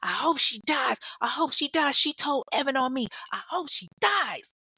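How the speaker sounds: mock high yell through laughing and crying. Speaker recounts a student yelling while pushed out of class, retelling a student's yelling. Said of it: "She's yelling".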